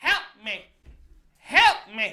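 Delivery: loud, repeated shouting. Retelling a man who kept shouting at the speaker outside a store, imitating someone shouting. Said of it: "starts shouting at me again".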